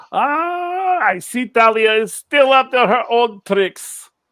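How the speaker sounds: loud, high, booming, amused laughing voice.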